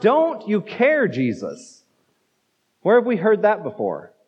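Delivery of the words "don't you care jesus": exasperated, drawn-out, swooping, frustrated outcry. Retelling a woman's cry to jesus, acting out her frustrated outcry. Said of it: "she cries out".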